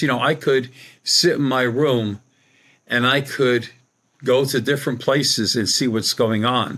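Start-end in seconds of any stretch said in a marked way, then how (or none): none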